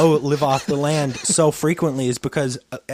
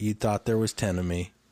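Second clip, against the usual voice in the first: put-on calm delivery, lower and quieter; 6 semitones lower, 7 dB quieter than usual. Retelling a movie scene, quoting a character's line: imitating a real calm delivery. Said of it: "real calm".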